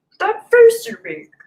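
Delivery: sage-like alien voice, pitch swooping. A streamer retries an impression for viewers: Yoda impression. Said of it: "It's my best Yoda right now".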